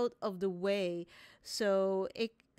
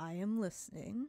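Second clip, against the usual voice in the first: soft, growling, rumbling tree-dragon voice; 5 dB quieter than usual. A very large tree dragon looks down at the group and speaks, rumbling, growling dragon voice. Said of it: "rumbling, growling voice comes out".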